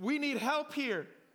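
scared, slow, drawn-out frightened cry. Retelling the disciples crying out in the storm: imitating a frightened cry for help. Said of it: "they were crying out like".

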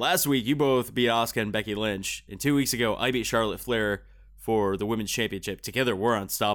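ordinary talk

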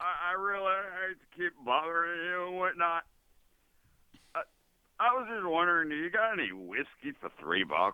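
put-on drunk voice. Asking for cheap whiskey while short on money: acting drunk. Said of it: "He's so drunk".

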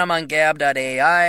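plain

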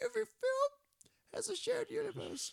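strained, very high, loud, slow creaky drawl. Introducing the show segment as a co-host would: imitating Timmy's voice. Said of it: "let me try and do it in my best Timmy voice here".

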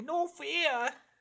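put-on very high-pitched New Jersey guy accent. Describing a pirate character whose accent suddenly changes, in a new jersey guy accent. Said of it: "a New Jersey guy".

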